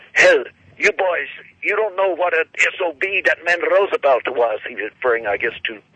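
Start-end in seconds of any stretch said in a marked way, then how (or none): 0.2-4.6 put-on thick Polish accent, much higher, slower. Recalling what an old man told the boys; imitating thick Polish accent. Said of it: "he still had a very thick Polish accent".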